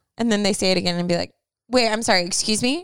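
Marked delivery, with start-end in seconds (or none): 1.7-2.9 sassy, incredulous, disbelieving tone with attitude. Acting out a reply to someone's rude remark: sassy. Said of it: "so many sassy things you could say".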